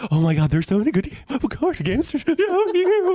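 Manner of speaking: giddy, gushing excitement, very high-pitched and climbing. Imitating how they sound when excited about card games, mock-excited and high-pitched. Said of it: "I start to get really high pitched".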